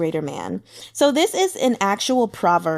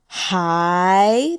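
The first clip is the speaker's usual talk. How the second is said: hi sweeping upward in a rising second tone. Demonstrating the second tone, going up: rising pitch on hi. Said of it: "that is the second tone going up".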